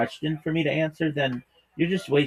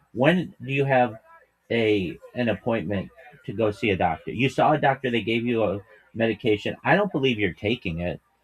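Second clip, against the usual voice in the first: plain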